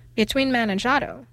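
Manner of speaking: plain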